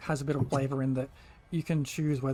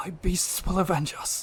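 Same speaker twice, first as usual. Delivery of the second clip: groggy, fatally wounded, dying witch voice; 4 semitones higher, 3 dB louder than usual. Voicing a witch struck by an arrow, collapsing: groggy dying witch. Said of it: "She just looks groggy".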